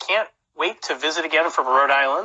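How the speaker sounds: plain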